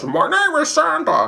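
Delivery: put-on very high, slightly drunk, old-timey drawl. Demonstrating the voice he used as a mall Santa, tipsy Jimmy Stewart Santa voice. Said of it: "kind of like a Jimmy Stewart who's a little bit drunk".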